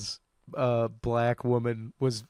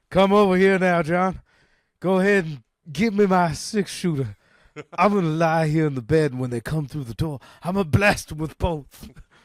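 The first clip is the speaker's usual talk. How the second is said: dying gunslinger voice, higher and louder; 4 semitones higher, 4 dB louder than usual. Joking about coughing while podcasting: dying Doc Holliday. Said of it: "podcasting with Doc Holliday on his deathbed".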